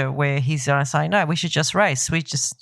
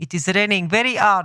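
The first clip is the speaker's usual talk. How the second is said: poor, barely French, bad fake put-on accent; 4 semitones higher than usual. Joking about a french accent, the speaker tries a bad mock french accent. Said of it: "that was hardly French either".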